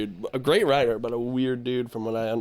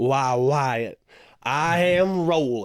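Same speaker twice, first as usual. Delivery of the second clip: put-on Southern gentleman's drawl. Speaker praises a favorite film role and quotes it, Doc Holliday Southern gentleman accent. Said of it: "put on like a Southern gentleman's accent".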